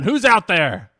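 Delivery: loud, shouting goblin-voiced yell. Game narrator voices the leader goblin calling down from the upper floor, goblin leader yelling down. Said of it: "and he yells down".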